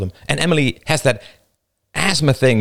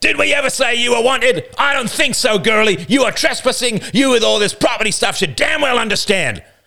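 very high, sudden, roaring bellow; 13 semitones higher, 3 dB louder than usual. The older boy suddenly roaring at Emily, roaring. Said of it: "The older boy roared suddenly".

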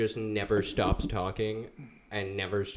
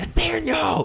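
piercing, shrill, high scream at top of lungs; 10 dB louder than usual. Retelling screaming someone's full name outside: imitating own scream of a name. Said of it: "I was out there screaming".

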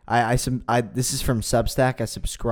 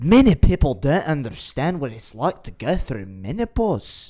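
clumsy, attempted put-on Scottish accent; 4 semitones higher, 4 dB louder than usual. Quoting a woman speaking on live tv, in an attempted scottish accent. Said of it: "I can't even do a Scottish accent".

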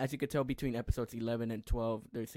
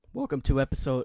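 very loud delivery with voice cracking mid-word; 2 semitones higher, 9 dB louder than usual. A podcast host starts the season 2 finale episode, voice cracking. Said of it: "my voice cracked".

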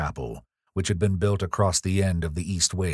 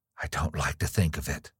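unsteady, not steady voice; 4 semitones lower, 5 dB quieter than usual. Narrator reading Evelyn's reply to Gabriel, spoken with an unsteady voice. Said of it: "she said unsteadily".

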